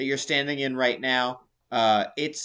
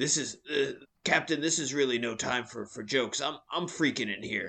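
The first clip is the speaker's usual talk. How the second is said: put-on pirate voice, quieter; 5 dB quieter than usual. Voicing Yoren, a sailor who is freaking out: Yoren's pirate voice. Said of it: "Why did Sam get to do a pirate voice?".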